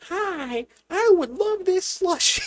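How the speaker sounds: very high, very loud, shrill silly voice. Showing how to order a slushy at a gas station in a funny voice. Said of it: "you order in a funny voice".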